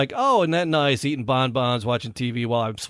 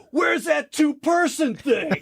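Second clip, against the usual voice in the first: very high, shrill, high-pitched scream. Speaker retells screaming alone in the driveway for help, retelling own scream. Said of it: "I'm screaming".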